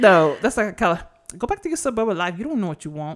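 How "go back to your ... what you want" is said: fast put-on New York accent, not quite landing. Trying different accents on the same line, attempting a New York accent. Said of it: "not like New York".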